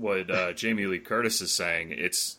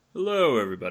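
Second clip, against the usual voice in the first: sexy, seductive, come-hither voice; 3 semitones higher, 3 dB louder than usual. Introduced on a commentary by a friend, greeting everybody in a sexy voice. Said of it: "That's that's his sexy voice".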